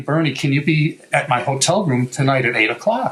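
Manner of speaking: ordinary talk, nothing marked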